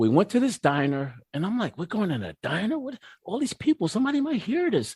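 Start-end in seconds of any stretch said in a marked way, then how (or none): 1.8-4.9 anxious, nervous, fretting, rising high-pitched tone. Retelling arriving at a diner for a fifth step: imitating own anxious past words. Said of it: "I was so anxious".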